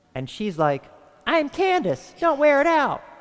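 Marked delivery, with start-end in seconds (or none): 1.3-3.0 high, dim, dumb-sounding voice. Telling an anecdote, voicing a primordial woman meeting a guy: dumb-sounding Candace voice. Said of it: "she sounded so dumb".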